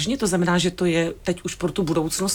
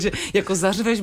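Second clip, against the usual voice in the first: usual speaking voice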